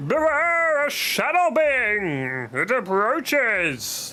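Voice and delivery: very high, slow, silly spirit voice. Voicing a game's spirit dialogue aloud, in a stupid spirit voice. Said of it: "doing stupid voices".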